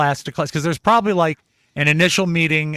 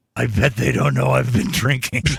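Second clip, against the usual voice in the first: carrying stage whisper, far too loud; 5 semitones lower than usual. Retelling what a late-arriving parent said in the auditorium: imitating a too-loud stage whisper. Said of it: "in a stage whisper too loud".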